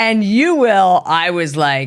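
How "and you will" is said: emphatic, insistent raised voice, pitched up. Retelling a client scolding them across the table: imitating a raised voice. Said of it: "had a raised voice the entire time".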